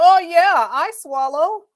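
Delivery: put-on loud, very slow, drawn-out screaming yell. Mimicking a lady they are watching: imitating someone screaming. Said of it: "She just screaming like".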